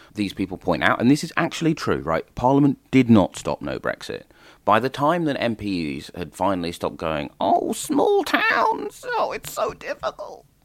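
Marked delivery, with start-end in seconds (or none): 7.4-10.4 very high, slow, drawn-out crying whine. Mocking MPs fretting over Brexit: Gareth Snell impression. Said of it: "Is that your Gareth Snell impression?".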